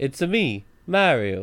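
loud, very slow, drawn-out delivery. Asking about a video, imitating Chris Pratt saying Mario line. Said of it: "video of him being like".

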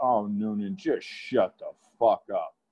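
acted mutter under breath. Retelling a rude remark a bully made: imitating someone muttering under breath. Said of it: "says under his breath".

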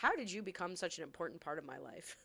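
mock dead serious, utterly dry deadpan. Recounting a TV scene, the speaker repeats a character's line, retelling a deadpan line. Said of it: "She was just deadpan".

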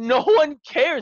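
emotional, pleading outcry. Retelling a guest's plea on a podcast: imitating an emotional plea. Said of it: "he was getting emotional and he was like".

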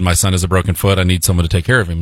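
ordinary delivery

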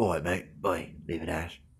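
very low, soft, full voice. Describing a film, the speaker quotes a character's line in an Idris Elba voice. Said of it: "doing full Idris Elba voice".

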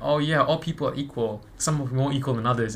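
plain

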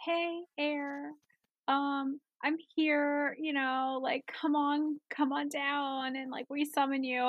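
faint, weak, feeble voice. Recalling summoning air during a ritual at home; imitating own weak voice. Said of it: "my voice was so weak".

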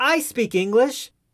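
high, shouted put-on small boy voice calling out. On a packed train, the speaker retells a little boy calling out: retelling a boy's shout. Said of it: "a little boy a few yards away shouts".

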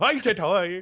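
over-the-top put-on Scottish accent. Showing how they say hello to each other in the morning, comically exaggerated Scottish accent. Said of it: "comically exaggerated Scottish accent".

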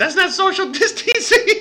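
very high, shrill, screeching woman scream. Retelling a woman's complaint about a man on a bike, imitating her screaming. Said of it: "she's screaming".

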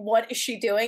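ordinary talk

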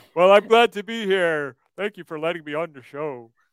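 little porcupine puppet character voice. Speaking as a porcupine puppet brought onto the show: porcupine puppet voice. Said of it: "I wanted to bring this fellow here".

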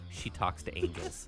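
acted deadpan delivery. Recalling looking someone right in the face, retelling a deadpan line. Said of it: "I would look at him dead deadpan".

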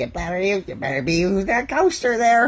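mock nagging-woman tone. The speaker demonstrates the tone men use for a nagging wife: mock nagging-wife tone. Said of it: "There's a tone that men use for, ... for nagging wife".

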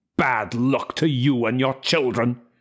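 snarling delivery. Narrator reading a man's reply in a quarrel over money, snarling. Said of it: "he snarled".

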